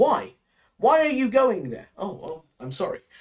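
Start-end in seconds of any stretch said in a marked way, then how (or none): 0.0-1.9 abrupt, slightly rude, blunt, pitched-up delivery. Teaching how to ask about someone's travel plans, showing the rude version; blunt, direct question. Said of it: "if we ask it in a more direct manner".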